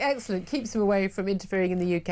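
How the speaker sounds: ordinary delivery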